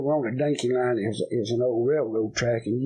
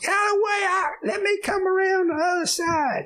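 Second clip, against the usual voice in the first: very high, piping put-on voice, shouted. Retelling what Harold shouted, sticking his head out of a truck: high voice. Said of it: "He gets this high voice".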